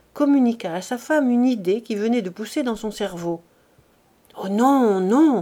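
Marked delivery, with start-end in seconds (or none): 4.4-5.4 murmuring with a shiver, much slower. A wife, hearing her husband's whispered idea, murmurs with a shiver. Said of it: "murmura Félicité avec un frisson".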